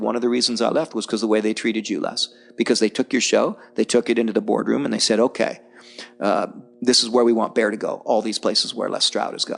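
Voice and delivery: ordinary talk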